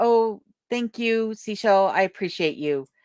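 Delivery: ordinary talk, nothing marked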